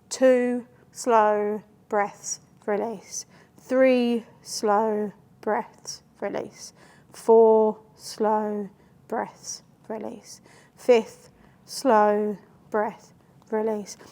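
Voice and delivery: unhurried, soothing, slow and calm delivery. Demonstrating the breath count she teaches midwives, slow counting breaths. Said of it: "It slows people down".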